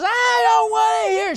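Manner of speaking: screaming outburst at top of lungs. Retelling how a woman in a crowd screamed at him, imitating a woman screaming. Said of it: "She started screaming at me".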